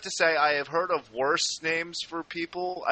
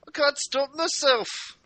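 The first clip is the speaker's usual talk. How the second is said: put-on high-pitched Irish accent. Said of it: "it's contagious".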